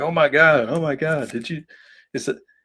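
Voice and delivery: acted laughing reaction. Retelling a convention visitor's reaction to a comic cover: imitating someone laughing. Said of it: "And he's laughing".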